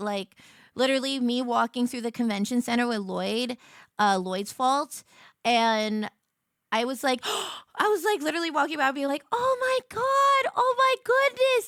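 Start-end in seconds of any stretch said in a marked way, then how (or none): 9.3-11.7 put-on very high, loud, excited starstruck freak-out. Recalling walking through a convention center among cosplayers, retelling excited freaking out. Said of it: "freaking out at the lads cosplayers".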